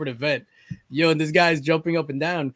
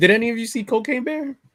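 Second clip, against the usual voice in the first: voice breaks and jumps high mid-line; 8 semitones higher, 3 dB louder than usual. Asking the others a question, voice cracking. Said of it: "why your voice crack like that for?".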